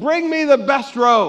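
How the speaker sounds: loud, high-pitched yell. Acting out the father welcoming his son home: yelling. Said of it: "And he yells".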